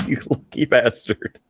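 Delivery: whispered, words cracking into laughter. Teasing a co-host about a viewer comment, laughing while talking. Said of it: "make it through that without laughing".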